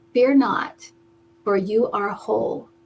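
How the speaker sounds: tender, gentle, low-toned voice. Telling of a voice heard while sitting in a hot tub, soft, low voice. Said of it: "in a soft, low voice".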